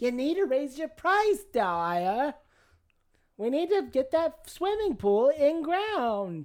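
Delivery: put-on very high-pitched old woman voice, New York accent.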